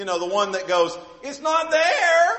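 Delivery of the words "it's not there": put-on high, whiny, helpless-sounding voice. Showing the voice a husband uses when he can't find something: whiny husband voice. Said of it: "employ the whiny husband voice".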